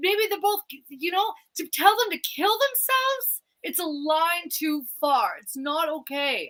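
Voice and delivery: high voice, genuinely upset, composure slipping. Speaker talking to Mary about two people online, upset. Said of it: "I didn't know how upset I was".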